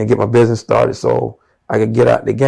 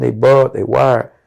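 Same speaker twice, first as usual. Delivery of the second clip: ordinary talk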